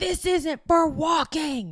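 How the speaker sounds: put-on very high, slow, drawn-out screaming. Retelling how a woman on a walkway screamed at the speaker: imitating a woman screaming. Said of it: "Screams at me".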